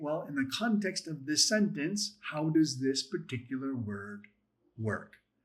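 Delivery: plain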